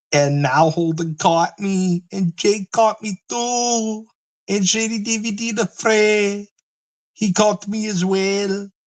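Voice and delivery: very high voice, long stretched-out "too". Doing a bit before naming it: impression of Q and Fee. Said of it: "that's my impression of Q and Fee".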